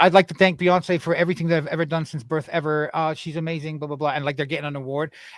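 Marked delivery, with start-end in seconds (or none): none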